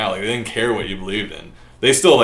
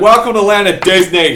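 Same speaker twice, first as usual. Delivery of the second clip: put-on obnoxious Boston accent, very loud and high; 10 semitones higher, 8 dB louder than usual. Retelling a show host's welcome line in the most obnoxious boston accent. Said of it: "the most obnoxious Boston accent ever. And he's like".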